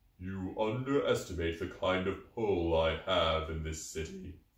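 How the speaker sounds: deep, hollow, inhuman voice. The listener overhears Xanathar answering Peggy: deep hollow Xanathar voice. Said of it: "deep and inhumanly hollow at the same time".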